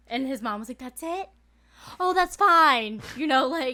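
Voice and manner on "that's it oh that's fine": play-acted easygoing, relieved tone, high and raised. Retelling a friend's mom reacting to news: imitating a relieved mom. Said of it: "she was so relieved".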